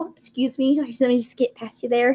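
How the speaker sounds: polite Midwestern manner. Playing a character passing someone in a crowd: polite Midwestern manner. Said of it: "for those of you that live in the Midwest".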